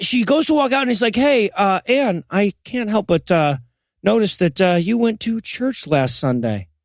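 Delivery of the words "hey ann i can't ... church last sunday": normal talking voice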